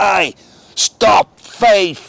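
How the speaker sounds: put-on London Cockney accent. Retelling the DJ stopping the music and calling out over the mic, cockney accent. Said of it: "and in that cockney voice".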